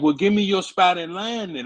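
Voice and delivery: high yelling. Acting out a retort to a line cutter: imitating a yell. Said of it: "That's what you yell up".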